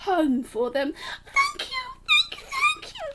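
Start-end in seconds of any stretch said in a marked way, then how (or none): 1.2-3.1 very high, rapid, squeaky little mouse voice. Narrator voicing the mouse and her baby thanking George, squeaky mouse voice. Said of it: "they squeaked".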